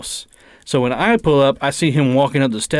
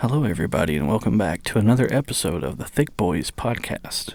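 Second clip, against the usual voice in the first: soft, low public radio host voice; 5 semitones lower, 5 dB quieter than usual. Podcast hosts brainstorming intros, one launches into an NPR intro voice. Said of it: "we could do like an N P R intro".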